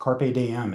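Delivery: mispronounced in a Southern accent. Quoting a Latin saying mid-sentence: butchered in a Southern accent. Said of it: "I just butchered that with a Southern accent".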